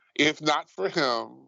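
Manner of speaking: plain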